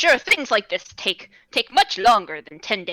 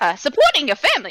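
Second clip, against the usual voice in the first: bad fake accent, pitched up, drifting from southern to Brooklyn; 4 semitones higher, 4 dB louder than usual. Repeating a line in character, bad wandering put-on accent. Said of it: "this accent is just going worse and worse".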